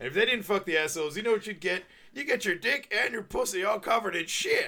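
mock very high, loud drunk-man voice. Retelling the punchline speech of a joke set in a bar, imitating a drunk man. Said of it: "drunk in bar really stands out".

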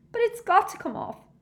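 squeaked high and loud. Reading a novel aloud, voicing Hermione's reply to Ginny, in a squeaky Hermione voice. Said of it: "squeaked Hermione".

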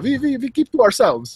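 poor put-on Russian accent. Speaker voicing the Russians who kept it quiet, in a terrible Russian accent. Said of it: "my russian accent's terrible".

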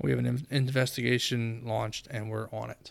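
ordinary delivery

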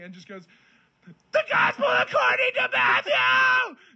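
very high, very slow, drawn-out scream. Retelling how a man in a long video read scripture aloud; retelling a scream. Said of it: "Just screaming".

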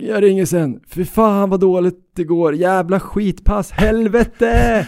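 mock exasperated, high, loud frustrated yell. Speaker retells what the listener shouted after answering the phone: retelling your shouting. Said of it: "så skrek du bara något i stil med".

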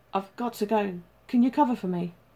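usual speaking voice

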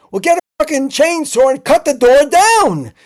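shrill, very loud, high-pitched yelling. Retelling a man shouting outside a phone booth, retelling a man yelling. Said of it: "he's outside of the phone booth like yelling".

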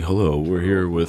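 nighttime radio announcer voice. Teasing that some guys sound like nighttime radio, showing it: nighttime radio voice. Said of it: "you have like a nighttime radio voice. Like".

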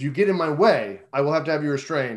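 put-on polite but firm voice. Retelling a film scene, the captain refusing: imitating a polite but firm captain. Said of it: "very polite, but very firm".

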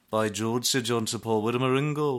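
put-on Scouse Liverpool accent. Reacting to a Hall of Fame award announcement, in a Liverpool accent. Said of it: "There I am doing a Liverpool accent".

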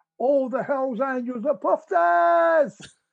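put-on top-of-voice yell. Recounting yelling from a hotel balcony down to a crowd, retelling a yell. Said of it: "yelled out the top of my voice".

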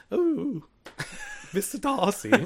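over-the-top voice, very high and swooping. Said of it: "That's my best Mister Darcy".

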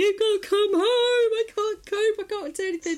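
put-on, very high, frantic, shrieking meltdown yelling. Retelling a meltdown after failing to get a son to school, shouting. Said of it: "really shouting and going".

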